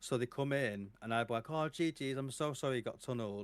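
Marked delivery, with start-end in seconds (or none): 1.5-3.4 acted apologetic tone with audible smirk. Retelling apologizing to a tunneled player after a game, retelling a smirking apology. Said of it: "and like I'd start smiling, smirking".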